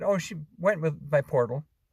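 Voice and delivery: ordinary talk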